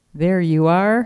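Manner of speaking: ordinary delivery, nothing marked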